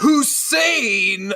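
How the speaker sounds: Hussein hit hard and punched out. Imitating how critics always said the president's full name: imitating heavy stress on hussein. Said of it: "they really want to hit that".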